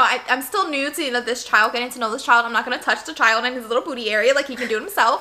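ordinary talk

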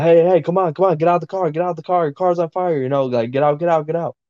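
put-on yelling. Recalling a car on fire, speaker repeats what they shouted at the man, retelling a yell. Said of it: "the whole time I'm yelling at him".

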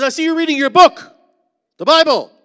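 shrill, very loud, high projecting voice. Retelling what a woman said looking into the cell, imitating her loud voice. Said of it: "That's just how she spoke, without a mic".

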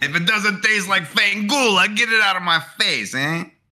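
put-on Russian accent, pitched very high. Joking about The Sopranos, doing a best Russian accent. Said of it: "that was my best Russian".

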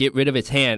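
plain

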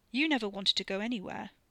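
ordinary delivery

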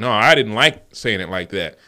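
ordinary talk

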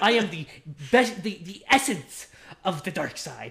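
put-on pretentious, pompous little-kid voice, grandly declaring. Acting out an imagined child talking back to his mother: imitating a pretentious five-year-old. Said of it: "such a pretentious five-year-old".

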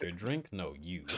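ordinary talk

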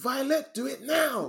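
very high, drawn-out, commanding shout. Retelling a scene where she was shouting at violet: imitating someone shouting. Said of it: "When she was shouting at Violet".

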